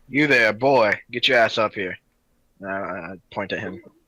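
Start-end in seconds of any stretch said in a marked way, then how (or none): 0.2-2.0 put-on drawled American southern accent. In a role-play scene, a character calls someone over, in a southern drawl. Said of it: "you did the accent again".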